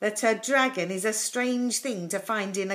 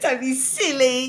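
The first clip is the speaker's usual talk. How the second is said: laughing while speaking, higher pitch and louder; 5 semitones higher, 6 dB louder than usual. Jonathan's big brother dismisses his dragon story, laughing while speaking. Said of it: "laughed his brother".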